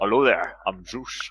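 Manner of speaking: put-on unchanging, natural Scottish accent throughout. Imitating an actor playing Zeus: Sean Connery impression. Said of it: "he never changed his accent".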